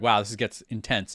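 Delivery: plain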